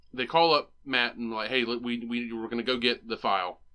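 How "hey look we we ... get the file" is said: normal talking voice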